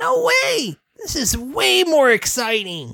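put-on very high, thrilled young filly voice.

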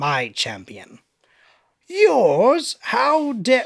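sudden put-on British accent, high and swooping. Narrating a story and voicing a character's reply, in a British accent. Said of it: "i don't know why i did a british".

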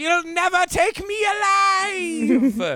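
very high, very slow, drawn-out battle scream. Voicing a character who jumps up to rush the mercenaries: screaming in character. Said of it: "jumps up immediately and screams".

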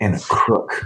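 grudging mutter, mumbled under breath. A player voices her still-untrusting character's aside: muttering. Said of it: "So she just mutters".

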